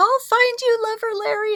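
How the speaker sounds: very high, mock swooning lover voice.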